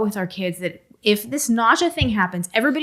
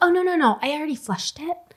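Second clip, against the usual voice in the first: high, repeated, dismissive voice; 6 semitones higher than usual. Mother retelling a conversation with her daughter, imitating her daughter. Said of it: "Your impression of her".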